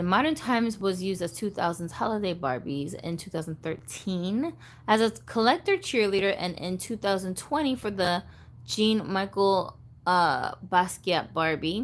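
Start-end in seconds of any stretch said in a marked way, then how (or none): none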